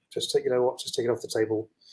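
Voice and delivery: ordinary talk, nothing marked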